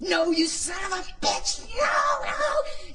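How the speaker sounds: acted scream, very high, very slow, rising. Recounting finally saying no to the fire, reenacting their own screaming. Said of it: "Starts screaming, screaming, screaming coming out".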